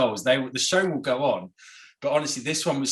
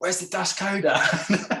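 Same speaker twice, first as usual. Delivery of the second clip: put-on shout, high and drawn-out, calling out; 6 semitones higher than usual. Retelling someone in a speeding car calling out: imitating someone shouting.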